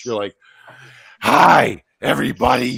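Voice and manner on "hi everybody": very loud, rough scream dripping with hate. Mocking how another speaker greets everyone: imitating someone screaming hatefully. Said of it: "you have hate in your voice when you're talking".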